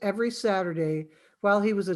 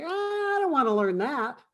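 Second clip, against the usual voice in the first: put-on high-pitched fussy child voice, pitched higher; 6 semitones higher than usual. Retelling Woody's reply to Gary during a lesson, in Woody's high kid voice. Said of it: "in this high voice".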